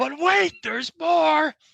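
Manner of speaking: very high, rough, hyped-up pitchman voice. Quoting a famous catchphrase to continue a story: Billy Mays voice. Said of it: "as Billy Mays, the great late Mays, would say".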